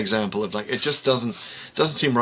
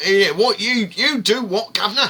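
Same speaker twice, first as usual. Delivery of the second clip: put-on very high London accent; 11 semitones higher than usual. Describing a new companion joining the show, doing Ben Jackson's London accent. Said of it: "it's a real London accent".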